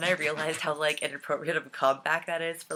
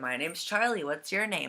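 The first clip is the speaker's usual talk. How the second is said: usual speaking voice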